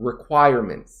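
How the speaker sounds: requirements with stress on the second syllable, quire. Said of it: "I stress the second syllable".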